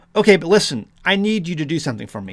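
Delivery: plain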